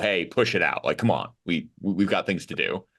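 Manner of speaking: plain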